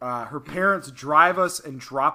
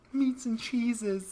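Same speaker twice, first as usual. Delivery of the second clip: put-on very high, soft, tiny toddler voice; 9 semitones higher, 6 dB quieter than usual. Retelling how they order their food, saying it like a 3-year-old. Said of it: "because I say it like a 3-year-old".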